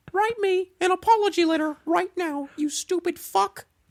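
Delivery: very high-pitched cartoon mouse voice. Asked by a co-host to do the voice, the speaker performs Mickey Mouse voice. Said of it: "can you do the voice?".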